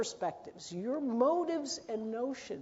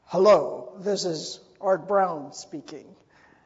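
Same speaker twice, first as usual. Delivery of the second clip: very loud, booming, hulking big-man manager voice; 5 semitones lower, 11 dB louder than usual. Retelling answering the phone as someone else: Art Brown voice. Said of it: "in a perfect imitation of Art Brown's voice".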